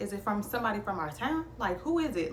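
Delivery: ordinary talk, nothing marked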